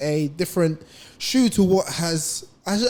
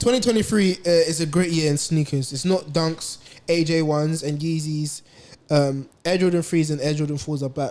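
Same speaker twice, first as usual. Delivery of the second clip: ordinary talk, nothing marked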